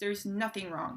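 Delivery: ordinary talk, nothing marked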